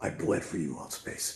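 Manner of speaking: dramatic, dropped deep, slow, breathy voice. Coaching someone to show their rage: deep dramatic Batman voice. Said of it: "you drop your voice down deep like that. You know, good old Batman style".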